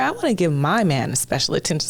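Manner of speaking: ordinary delivery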